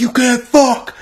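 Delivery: shrill, intense shout pitched very high. Retelling a man yelling into his phone after taking a picture, imitating an intense yell. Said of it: "Like so intensely".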